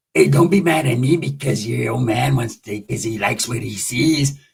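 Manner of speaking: low, gravelly growling voice. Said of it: "like, a gravelly voice".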